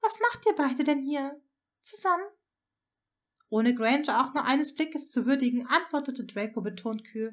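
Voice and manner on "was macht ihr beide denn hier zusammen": hesitant, slightly unsure, a little thrown tone. A woman questions a man who has arrived with his son, slightly unsure. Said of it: "Leicht verunsichert fragte sie".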